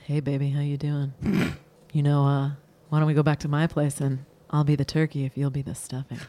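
seductive, low, sexy voice. Asked to say it for the people at home, she delivers it in a sexy voice. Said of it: "you were going to say it in a sexy voice".

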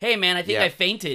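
acted yelling. Retelling waking up and calling out to the listener, re-enacting a yell. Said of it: "I'm yelling".

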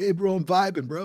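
Californian surfer dude voice. Speaker mocks a word that once scared him, in a California surfer voice. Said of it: "That sounds very Californian surfing".

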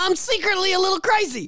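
very high, squeaked-up voice. Picturing Bill Burr walking in for a Star Wars part: imitating Bill Burr. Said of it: "picture Bill Burr walking in".

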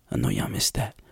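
whispered voice. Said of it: "why am I whispering to you?".

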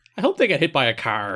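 delighted, gleeful tone, acted out. Retelling what a wrestler said about two brawlers: imitating Raven's gleeful voice. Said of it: "a glee in his voice".

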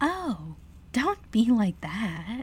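high, sing-song giggle through the words. One character answers another who claims the bridge, speaking with a giggle. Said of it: "said Tinsel with a giggle".

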